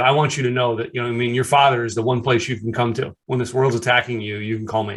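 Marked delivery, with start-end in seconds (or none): none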